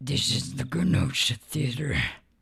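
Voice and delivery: very deep, low-pitched demon voice. Retelling a Kenosha Theater plug done during a long stream: demon voice. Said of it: "a Kenosha Theater plug in, like, a demon voice".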